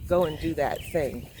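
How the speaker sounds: ordinary delivery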